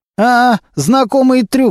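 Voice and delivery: snide, knowing, sneering jeer, pitched high. Narrator reads a character's reply to an offer to settle things nicely, snide and smirking. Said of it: "ехидно улыбнулся клешня".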